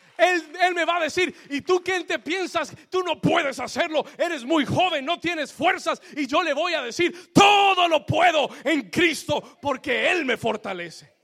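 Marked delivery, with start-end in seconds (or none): 7.3-11.1 loud, screamed, preacher-style delivery. Speaker tells what they will answer someone who doubts them, screaming. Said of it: "I'm sorry if I'm screaming too much today".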